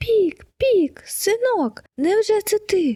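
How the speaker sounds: very high, drawn-out cry of overjoyed surprise. Narrator reads a father bird spotting his son on a fir tree, shouting. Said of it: "закричав тато Чижик".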